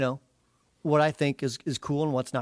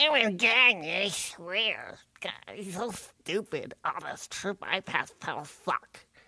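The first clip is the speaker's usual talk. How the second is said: put-on old man voice, higher; 4 semitones higher, 5 dB quieter than usual. Doing the bit from his YouTube trailer in an old man voice. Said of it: "I got the old man dialect down pretty good".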